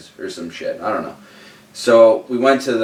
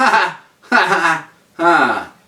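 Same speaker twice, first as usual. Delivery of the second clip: put-on uneasy laugh, higher pitch, slower; 8 semitones higher than usual. Retelling how a few of them reacted to something dark and weird: imitating uneasy laughter. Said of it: "a few of us are like".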